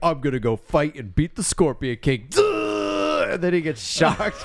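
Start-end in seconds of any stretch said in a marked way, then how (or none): 0.0-2.3 pompous, rushed, self-satisfied, rattled-off delivery. Describing a funny scene, acting out Imhotep, mock-proud Imhotep voice. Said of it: "Emotep is like all proud and pompous".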